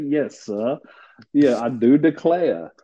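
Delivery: put-on Southern accent in a gentleman style. Joining banter about gentlemen, answer in a southern gentleman voice. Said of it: "oh a southern gentleman".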